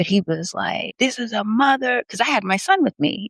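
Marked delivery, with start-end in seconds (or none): 1.0-2.0 mock screaming, high-pitched yell. Retelling what a man from the store screamed: imitating a man screaming. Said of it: "was screaming at this man".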